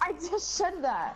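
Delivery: defensive tone. Streaming a game, answering another player: defensive. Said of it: "no need to get defensive".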